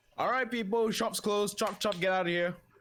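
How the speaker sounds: loud, shrill, very high barking delivery. Storyteller voicing a woman ordering shoppers out of the shop, loud barking voice. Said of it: "She barks out in a rather loud voice".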